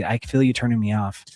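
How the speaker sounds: normal talking voice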